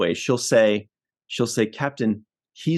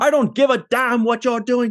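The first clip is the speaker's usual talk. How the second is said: put-on angry captain voice, pitched higher; 12 semitones higher than usual. Retelling how Captain Picard orders the phasers fired: imitating an angry Captain Picard. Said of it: "Captain, I sense you're angry".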